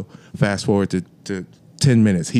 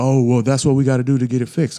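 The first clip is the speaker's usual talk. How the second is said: put-on raised voice, higher; 4 semitones higher than usual. Retelling what the semi truck driver said about the fix: imitating someone raising his voice. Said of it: "But you raising your voice".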